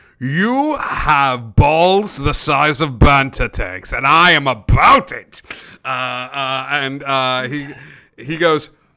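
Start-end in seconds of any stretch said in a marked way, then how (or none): 0.2-5.4 laughing uproariously, roaring laughter throughout. Voicing a card player who answers a bold bet: laughing uproariously. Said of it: "He laughs uproariously".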